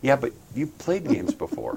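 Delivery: murmured, very quiet, soft, almost under the breath. Retelling another person's reply to a complaint: imitating someone speaking very quietly. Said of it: "very quietly said".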